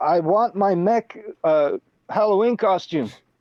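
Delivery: shrill, very slow, high, drawn-out yell. Playing a character who wants a costume back: hollering through a door. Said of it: "start hollering through the door".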